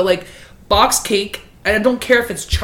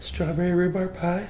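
small, quiet, scared voice. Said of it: "Like, scared".

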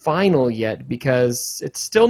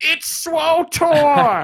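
put-on angry male voices, higher; 13 semitones higher than usual. Retelling angry commenters correcting a mistake: imitating angry men. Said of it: "twenty very angry middle-aged men telling me".

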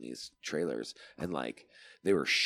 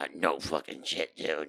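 put-on gargling voice. Telling a cannery story, the speaker imitates their boss Todd's gargling voice. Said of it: "He t- he talked like this".

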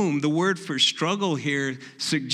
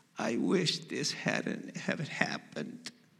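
mock small, teary whisper, drawn out; 2 semitones lower, 10 dB quieter than usual. Recalling him wincing while his wounds were tended, imitating a little tearful voice. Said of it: "in a little tearful voice".

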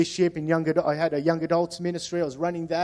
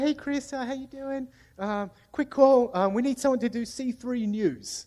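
very sweet, pitched-up voice; 7 semitones higher, 4 dB quieter than usual. Retelling a phone call from the campus pastor: imitating Natalie's sweet voice. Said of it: "She had a real sweet voice".

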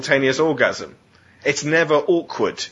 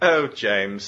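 put-on pitying tone, lower; 4 semitones lower than usual. Retelling what the girl says to James the morning after, in a mock-pitying tone. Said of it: "in a pitying way".

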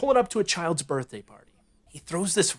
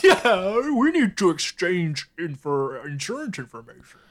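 put-on talking-dog voice; 3 semitones higher than usual. Telling a story about a car hitting a golden retriever, the dog speaks: Air Bud voice. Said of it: "Was that your Air Bud voice?".

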